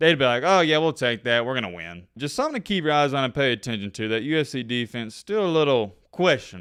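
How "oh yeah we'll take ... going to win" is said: ordinary delivery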